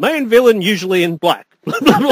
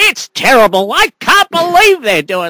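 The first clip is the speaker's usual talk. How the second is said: put-on big, squeaky, elderly woman voice; 3 semitones higher than usual. Retelling what an old woman said: imitating her big squeaky voice. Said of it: "this big squeaky voice".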